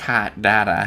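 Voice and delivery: put-on Boston accent, badly done. Repeating the other speaker's accent attempt back to them: bad Boston accent. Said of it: "this reinterpretation of the Boston accent".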